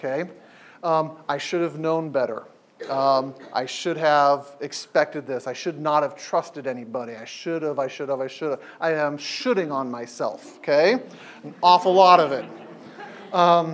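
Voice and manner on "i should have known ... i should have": ordinary talk, nothing marked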